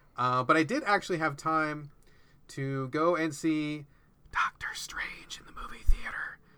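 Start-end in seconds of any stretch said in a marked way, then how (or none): 4.3-6.4 hushed, secretive whisper kept very quiet. Speaker confides something their son doesn't know about: whispering. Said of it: "And I'm whispering that because my son doesn't know".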